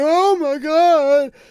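high, loud, shrill, weepy, acted-out wail. Telling a story about a baby face-planting, quoting the mom: imitating the mom crying. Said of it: "she's like crying".

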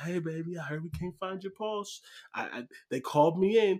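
acted sweet elderly nurse voice. Joking about a nurse finding a faint pulse, imitating a sweet older nurse. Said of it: "a sweet older lady who's been doing it forever".

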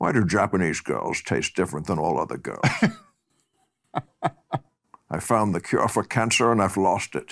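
put-on Scottish film-star voice. Speakers trade film-star impressions; this one does a Sean Connery impression. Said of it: "Pretty good Sean Connery".

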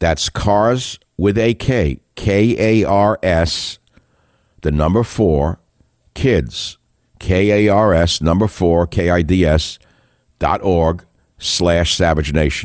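spelled out slowly. Reading an ad to listeners, saying it slowly. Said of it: "I'll say it slowly".

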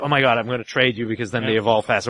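plain

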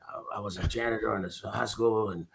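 imitated drunk mumbling. Retelling how a drinking speaker began his story: imitating drunken mumbling. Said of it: "he's mumbling into the mic".

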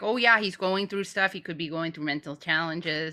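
put-on Canadian-accented speech. Mimicking a canadian guy's reaction for a co-speaker, in a canadian accent. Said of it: "good Canadian accent".

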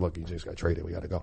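hushed half-whisper, barely audible. Retelling telling the coaches a player just got traded: imitating own half-whisper. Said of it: "So I'm whispering to the coaches".

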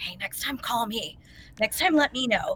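hushed, soft half-whisper. Retelling what someone quietly told the group: imitating someone half-whispering. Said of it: "kinda, like, whispering".

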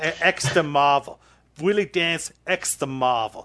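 flawless, spot-on Brooklyn accent. Recalling your old podcast character, saying his alias: Willie Dance Brooklyn accent. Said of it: "your Brooklyn accent, flawless".

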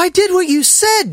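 very high, ashamed, begging and pleading voice. Narrator reading Jin's reply to the irritated Admiral Rockland, pleading. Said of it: "the plea in her voice".

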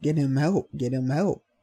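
mock screaming, repeated cry. Retelling how friends reacted to an injury: imitating friends screaming. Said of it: "they're screaming".

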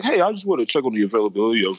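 put-on studious tone. Acting out how a man sounded on a phone call, in a mock-studious voice. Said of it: "I know he called with the studious voice".

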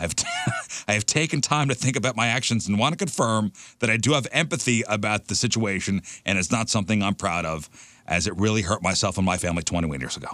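mock sincere apologetic voice, teary.

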